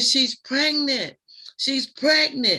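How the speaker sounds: high, frantic, urgent screaming. Retelling a crowd fight in front of a pregnant friend: imitating someone screaming. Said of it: "I'm screaming".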